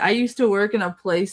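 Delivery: ordinary delivery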